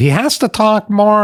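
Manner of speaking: very high, slow, drawn-out woman's voice. Quoting a friend of the speaker's wife, imitating her. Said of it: "I'm imitating her now".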